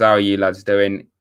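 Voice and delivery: ordinary delivery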